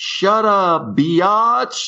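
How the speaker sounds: put-on, shrill, very high-pitched shouting. Retelling what was yelled alone in the car: retelling own yell. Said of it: "yesterday I was yelling".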